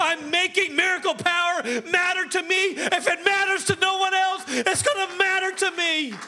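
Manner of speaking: shouting. Preaching about making miracle power matter, yelling. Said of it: "I know I'm yelling today".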